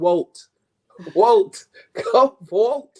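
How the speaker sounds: put-on accent from the Bahamas. Urging listeners to vote, quoting their grandmother: imitating grandmother's Bahamian accent. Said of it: "with her Bahamian accent".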